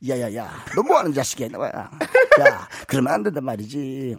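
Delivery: put-on deep, swooping sitcom character voice. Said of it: "야야야 한 번 더 큐".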